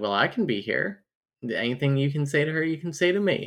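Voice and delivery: plain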